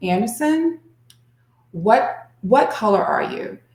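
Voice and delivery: settling, gentle, calm soothing tone. Retelling how someone spoke to a very angry, upset person, in a calm, soothing voice. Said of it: "in a calm, soothing voice".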